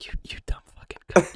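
unvoiced ASMR whisper with an insulting tone.

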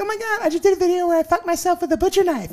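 put-on chirpy, very high, rapid, happy girly voice. Retelling what a woman told them, imitating a happy girl's voice. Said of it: "This is your female voice".

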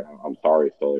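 normal talking voice

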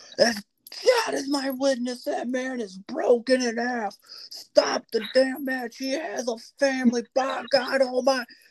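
mock, high-pitched, shouted announcer call. Retelling a favorite wrestling call, imitating J R yelling. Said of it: "J R yelled out".

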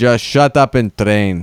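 put-on strange Russian accent. Telling a lower belt to be quiet: weird Russian accent. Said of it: "that sounded like a weird Russian".

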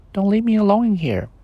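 tiny, very high little voice. Narrator voicing a voice calling from the dark closet, quiet little voice. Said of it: "said a quiet little voice from the darkness".

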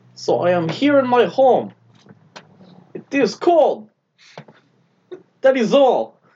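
high announcer voice, pitch swinging up and down. Performing a social media story after being asked for an impression: Vladimir Putin impression. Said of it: "Do an impression of him doing, like, an Instagram story".

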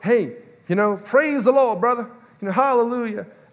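put-on American accent. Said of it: "put on my, my American accent there".

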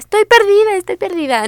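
high, shouted cry, calling out. Retelling what a lost friend shouted: retelling a lost friend's shout.

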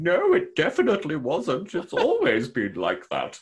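put-on voice, high, slow, swooping, sing-song. Retelling an officer denying a change over the comm: Admiral Doherty putting on a voice. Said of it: "Admiral Doherty over the comm putting on a voice".

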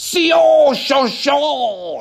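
very high yell with Sio drawn out. Quoting a movie scene: Christoph Waltz impression, yelling. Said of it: "he goes something like".

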